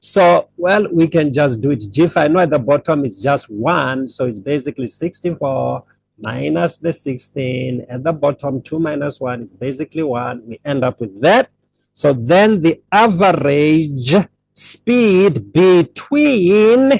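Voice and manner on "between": "between" hit hard and heavily emphasized. Working through a calculation for a listener, stress on 'between'. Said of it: "I'm stressing the words between".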